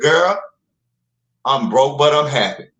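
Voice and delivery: full Mississippi Southern drawl. Retelling what a young woman said to her friend: imitating a Mississippi Southern drawl. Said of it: "in all her Mississippi Southern drawl glory".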